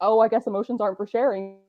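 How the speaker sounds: plain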